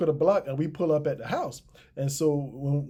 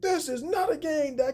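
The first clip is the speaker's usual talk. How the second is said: mock yelling, shrill and very high pitched; 11 semitones higher than usual. Retelling a man yelling at someone during a confrontation: imitating someone yelling. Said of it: "he's yelling at Daiquiri".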